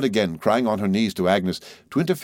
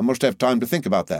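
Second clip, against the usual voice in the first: ordinary delivery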